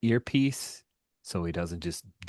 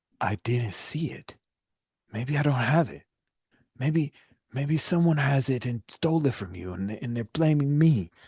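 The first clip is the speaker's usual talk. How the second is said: thick, slurred, pitched-up, battered, desperate pleading voice; 8 semitones higher, 5 dB louder than usual. Narrating a scene where Minho answers the men beating him, in Minho's slurred voice. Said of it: "you hear Minho's slurred voice as he said".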